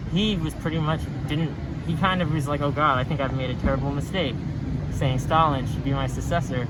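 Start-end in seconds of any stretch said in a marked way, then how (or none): none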